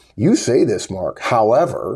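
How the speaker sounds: condescending, superior, slow supercilious drawl. Retelling how someone replies in a disagreement: mock-supercilious tone. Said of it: "they say it in a very supercilious tone".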